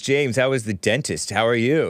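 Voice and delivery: plain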